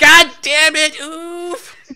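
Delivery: very high, loud, slowed, drawn-out scream.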